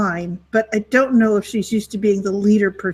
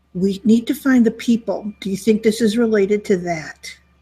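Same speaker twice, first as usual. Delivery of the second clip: musing, piecing it together mid-thought. Voicing a woman who senses someone was here, speaking very quietly. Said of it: "She says it very quietly".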